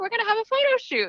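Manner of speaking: high, casual, offhand, nonchalant voice.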